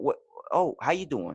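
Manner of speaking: quiet yet yelling delivery. Retelling a guest's impression on a podcast: Mark Wahlberg impression. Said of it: "this quiet, but, like, yelling kind of".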